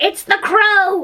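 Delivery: very high, shrill voice of alarm. Narrator reads Tweedledum crying out as a dark shape approaches, shrill alarmed cry. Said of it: "cried out in a shrill voice of alarm".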